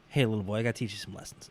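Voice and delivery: put-on condescending wrestler voice. Imitating a wrestler talking down to a rival: condescending AJ Styles impression. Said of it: "I like this weird condescending A J Styles where it's like".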